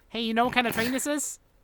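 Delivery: put-on high, bratty, annoying little kid voice. Joking about sounding eccentric: put-on annoying kid voice. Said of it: "Just sound like an annoying kid".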